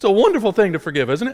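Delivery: pitch jumping high, quick and unexpected. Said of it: "my voice went so high right there".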